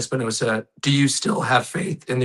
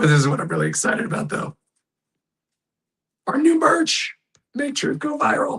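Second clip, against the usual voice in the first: hoarse, very high, swooping voice giving out. Host wrapping up a show and plugging new merch: losing voice. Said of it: "I can't talk. My voice is gone".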